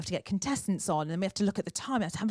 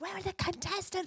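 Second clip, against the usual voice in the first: put-on shout, higher; 11 semitones higher, 6 dB quieter than usual. Retelling calling out for the missing contestants during a live show: imitating own shout. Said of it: "I'm shouting".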